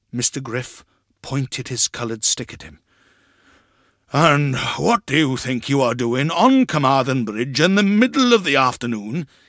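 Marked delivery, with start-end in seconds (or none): 4.1-9.2 severe, stern, raised reproving voice. Narrator reads Mr. Griff questioning Grandpa on Carmarthen Bridge, sternly. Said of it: "he said sternly".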